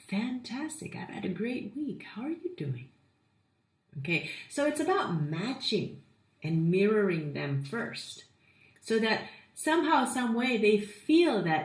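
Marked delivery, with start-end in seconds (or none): 0.1-2.9 toned-down, subdued, soft and pitched up. Showing how to answer a greeting without scaring people off: toned-down energy. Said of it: "you might want to get a little bit toned down".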